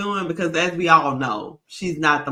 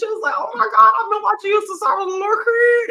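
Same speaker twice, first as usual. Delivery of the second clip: very high, giddy, starstruck little-kid voice, acted out; 4 dB louder than usual. Retelling a young lady meeting a coach she grew up watching, imitating childlike excitement. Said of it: "she was just like a little kid".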